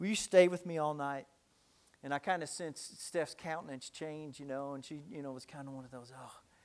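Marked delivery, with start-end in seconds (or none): 0.0-1.3 put-on frightened, pleading child voice, quivering. Retelling a scared child asking Mommy at bedtime; imitating a child's trembling voice. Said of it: "ask with a trembling voice".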